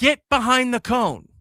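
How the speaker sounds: shrill, very high, loud yell. Retelling telling a kid at practice to get behind the cone: imitating himself yelling. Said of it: "yelling at him".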